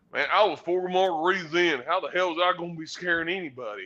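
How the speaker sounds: put-on hearty, high, loud Tennessee country accent. Retelling what DDK answered after being told off: DDK's Tennessee voice. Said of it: "in that great Tennessee voice goes".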